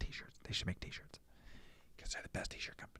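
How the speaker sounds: in a whisper. Mid-chat about t-shirts, the speaker whispers without knowing why, whispering. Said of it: "I don't know why I'm whispering".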